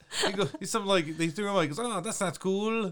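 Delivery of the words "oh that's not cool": slow goblin voice with put-on Italian accent. Retelling what the thrown-out goblin said: imitating an Italian-sounding goblin. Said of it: "he sounded like Italian".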